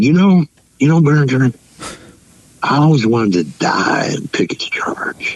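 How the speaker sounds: mock eager, thrilled, excited voice like a kid. Retelling what a dinner companion said at the table: imitating excited speech. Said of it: "in his excitement, he said".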